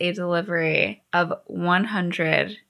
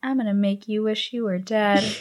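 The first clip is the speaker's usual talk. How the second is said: put-on muttering under the breath. Retelling a story, voicing the woman's reply as a retold under-her-breath mutter. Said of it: "And under her breath".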